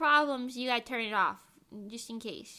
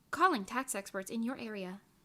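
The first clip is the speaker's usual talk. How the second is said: quieter automated AI assistant voice; 4 semitones lower, 4 dB quieter than usual. Joking about not being a real person, the speaker does an ai voice. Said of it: "you just hear me go".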